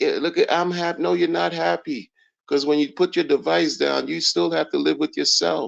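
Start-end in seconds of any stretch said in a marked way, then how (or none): 0.0-1.0 put-on little-kid show-off voice, boastful. Mocking bitter crypto people's fake happiness: imitating people acting like little kids. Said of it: "it's like little kids".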